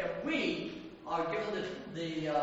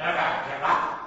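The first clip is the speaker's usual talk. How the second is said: put-on stout old bulldog voice, dropped low and loud; 5 semitones lower, 9 dB louder than usual. Retelling his radio statement to the British people, in Churchill bulldog voice. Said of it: "in his old bulldog voice".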